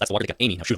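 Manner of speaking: plain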